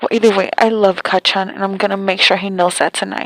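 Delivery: ordinary delivery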